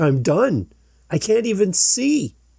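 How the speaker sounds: frantic, desperate, high, swooping panic, rising. Retelling what a man who couldn't see said on the field, imitating someone losing it. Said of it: "he's losing it".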